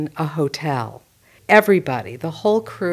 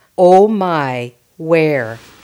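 exaggerated Fargo accent with long drawn-out O sounds; 7 dB louder than usual. A film clip illustrating the pure Fargo accent, in Marge's Fargo accent. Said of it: "An example is when Marge says".

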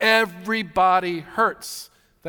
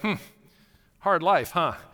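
acted, dry, snarky, sarcastic little aside. Retelling a remark to a spouse on a beach walk: retelling a snarky remark. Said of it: "in just kind of a snarky way".

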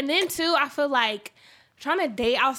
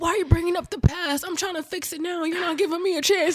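put-on elderly grandpa voice, pitched up; 6 semitones higher than usual. Acting out a manipulative person's excuse, in a grandpa voice. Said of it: "That's a grandpa voice".

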